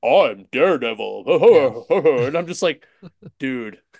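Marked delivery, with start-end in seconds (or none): 0.0-2.2 big, booming, way overdone superhero voice. Complaining about the animated series' Daredevil voice actor, overly boomy Daredevil voice. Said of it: "his voice is like overly boomy".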